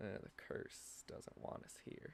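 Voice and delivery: hushed, muttered whisper under the breath. Game master voices Waldo looking out his wagon window at a sandstorm, muttering to himself. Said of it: "he mutters to himself".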